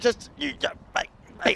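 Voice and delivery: breathy, whispered mutter. Doing an impression of the bowler's send-off: impression of the bowler. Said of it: "Let's do our best impression of what that".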